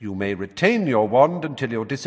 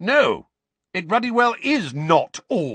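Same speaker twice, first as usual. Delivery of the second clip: furious, angry bellow, high pitched; 7 semitones higher than usual. Reading the story, the narrator voices Uncle Vernon answering Harry: Uncle Vernon bellowing. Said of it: "bellowed Uncle Vernon".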